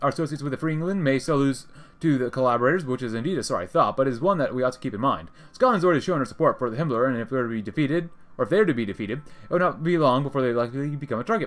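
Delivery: ordinary talk, nothing marked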